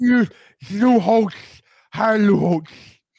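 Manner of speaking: loud, bad put-on old man voice. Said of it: "Is that your Lou Holtz impression? That's terrible".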